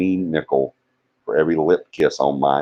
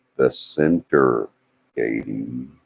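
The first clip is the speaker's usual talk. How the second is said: carefully slowed, deliberate, word by word; 4 semitones lower than usual. Repeating a point for a listener after saying it too fast, slowed down. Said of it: "I have to slow down".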